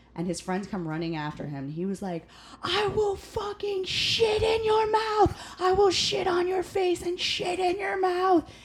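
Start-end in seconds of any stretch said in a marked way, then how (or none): 2.7-8.5 put-on, very high-pitched, screaming voice. Retelling a man charging back into a restaurant at his manager, imitating screaming. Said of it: "screaming this in the middle of the restaurant".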